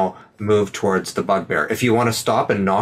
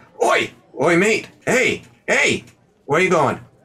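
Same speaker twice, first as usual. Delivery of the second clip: goblin voice, pitched way up; 10 semitones higher than usual. Voicing a goblin who spots a player walking toward a door: goblin voice. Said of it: "the goblin sees, like".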